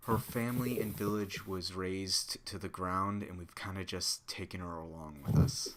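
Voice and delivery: hushed, secretive half-whisper. Speaking in character to a companion so another cannot hear: half-whispering. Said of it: "And I whispered to her".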